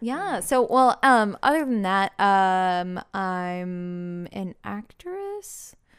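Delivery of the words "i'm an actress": slow, quiet, unsure tone. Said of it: "You sounded so unsure".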